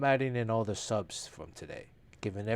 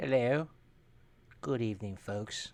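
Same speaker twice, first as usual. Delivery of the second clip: put-on Australian accent. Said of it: "this is more of an Australian accent".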